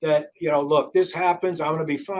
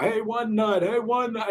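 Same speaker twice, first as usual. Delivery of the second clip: put-on jeering crowd yell, taunting, pitched up; 5 semitones higher than usual. Retelling how people yelled at the speaker after a game: imitating people yelling. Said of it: "people were yelling at me like".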